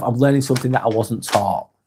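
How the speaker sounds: ordinary talk, nothing marked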